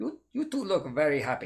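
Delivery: terrible put-on Indian accent. Recalling an economics teacher remarking on two smiling students: terrible indian accent. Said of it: "that's a terrible Indian accent".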